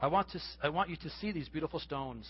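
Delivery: plain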